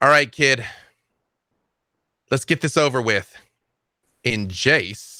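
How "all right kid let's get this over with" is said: called out loudly, voice lifted. Voicing a character calling a kid to come face her: raised voice. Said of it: "raises her voice and says".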